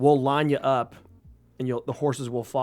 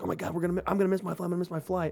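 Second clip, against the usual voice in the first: acted, high, rushed, frantic, flustered panicked babble; 5 semitones higher, 5 dB quieter than usual. Retelling a race to the airport before a flight: imitating someone freaking out. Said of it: "we were so freaking out".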